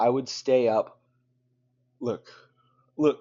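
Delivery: loud, words pushed out mid-yawn. Speaker tells the audience about their sleep habits: yawning. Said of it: "I'm yawning right now".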